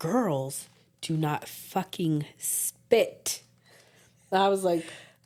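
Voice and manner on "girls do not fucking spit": put-on angry, furious scolding tone. Retelling how Dee scolded her for spitting: imitating someone angrily scolding. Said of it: "she was super pissed".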